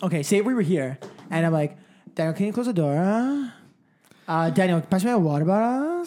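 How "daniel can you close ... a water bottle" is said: "door" and "bottle" curled upward at the end. Acting out how someone asks for things: imitating someone's vocal twist at line ends. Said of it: "ending everything with a vocal twist".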